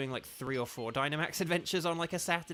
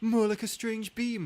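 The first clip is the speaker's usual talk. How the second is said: put-on cartoon villain voice, higher pitch; 5 semitones higher, 4 dB louder than usual. Picking Gastrodon in a Pokémon battle, the speaker jokes in a James from Team Rocket voice. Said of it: "I do the James voice".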